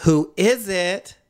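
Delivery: awful mincing voice, pitched way up, over-the-top.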